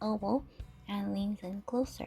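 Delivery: ordinary delivery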